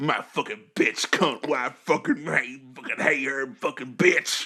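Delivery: venomous, hateful grumble muttered under the breath. Imitating the puppeteer under the counter: imitating a hateful puppeteer. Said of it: "does the voice does it with hate in their heart".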